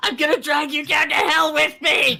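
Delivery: very high, screeching goblin yell. Voicing a slain goblin come back to haunt a character: yelling as a dead goblin. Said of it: "Who is yelling in my ear?".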